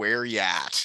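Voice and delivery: normal talking voice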